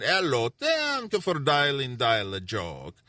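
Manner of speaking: light put-on Polish accent, slow and sing-song. Recalling the greeting on the dial-a-joke line, done in a little polish accent. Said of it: "I'd use a little Polish accent".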